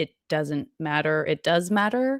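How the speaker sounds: ordinary delivery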